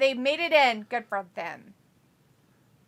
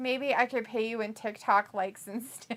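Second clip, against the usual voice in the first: normal talking voice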